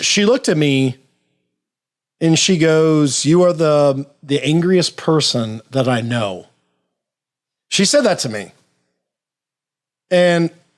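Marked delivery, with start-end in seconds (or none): none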